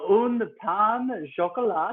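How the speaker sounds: put-on French accent. Ordering pastries from a server, speaking in a French accent. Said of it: "your French accent is very good".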